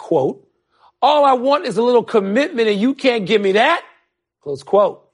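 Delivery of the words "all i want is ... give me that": plain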